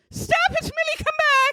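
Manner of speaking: play-acted very high, shrill yell. Retelling a dog walker calling after her dog: imitating someone yelling. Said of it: "She's yelling".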